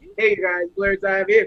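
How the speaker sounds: deep, good radio announcer voice. Showing how Chris, our straight guy who gets the endorsements, sounds: Chris's good announcer voice. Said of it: "he got the good announcer voice".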